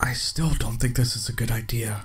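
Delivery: quiet aside, muttered low under the breath. A passenger in the back seat speaks toward the narrator, under his breath. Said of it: "Rob said under his breath".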